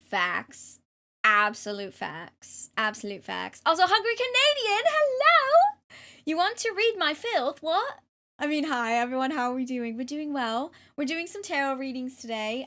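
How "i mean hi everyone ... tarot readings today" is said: put-on English accent. Greeting everyone before doing tarot readings, in a put-on English accent. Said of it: "I have sixty seconds remaining on my English accent".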